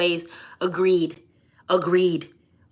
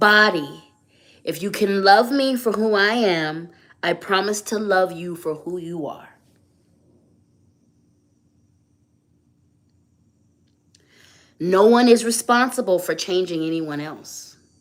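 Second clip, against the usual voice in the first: very slow, deliberate, every word said with intention. Leading others with closed eyes in repeating an affirmation: very slow, with intention. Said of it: "repeat this very slowly".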